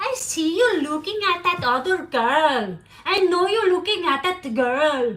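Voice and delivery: put-on Indian English accent. Retelling the scene, trying it out in an indian accent. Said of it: "I should have the Indian accent".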